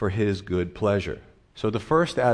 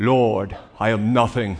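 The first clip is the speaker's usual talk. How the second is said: loud, slow, best-effort put-on English accent; 5 dB louder than usual. Telling a joke, voicing a pastor praying on one knee: best english accent. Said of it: "with his best English accent".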